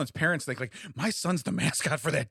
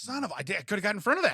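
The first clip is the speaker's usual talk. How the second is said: angry, frustrated, annoyed exclamation; 4 semitones higher than usual. Imitating the other speaker getting angry about a lobbed ball: imitating someone getting angry. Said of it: "it makes me angry".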